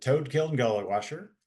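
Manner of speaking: ordinary delivery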